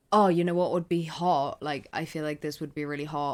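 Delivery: ordinary delivery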